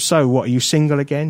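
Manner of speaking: normal talking voice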